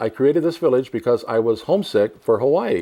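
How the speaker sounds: ordinary talk, nothing marked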